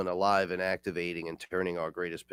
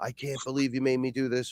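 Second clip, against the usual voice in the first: mock screaming, high and furious; 6 semitones higher than usual. Retelling a cousin's reaction during the experience: imitating cousin screaming. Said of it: "screaming, cursing at me".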